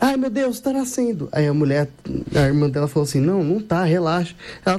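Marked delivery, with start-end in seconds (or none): 0.0-1.3 frantic, high, panicked cry of alarm. A driver retells a woman whose water broke, retelling her shout. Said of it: "a mulher começou a gritar assim".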